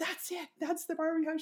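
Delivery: very high, worked-up freaking out. Retelling her husband spotting a mansion on the hill, imitating her husband freaking out. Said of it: "starts freaking out going".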